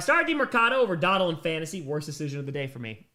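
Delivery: ordinary talk, nothing marked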